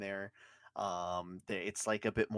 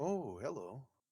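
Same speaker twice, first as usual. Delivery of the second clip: voice of a small stone giant; 4 semitones higher, 4 dB quieter than usual. Voicing a little stone giant greeting a player: little stone giant voice. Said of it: "moves his head over, he's like".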